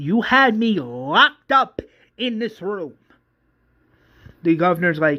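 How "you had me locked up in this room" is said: mock very slow, high, drawn-out, stretched-out scream. Voicing a character in a retold story: screaming. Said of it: "Vesta then screams saying".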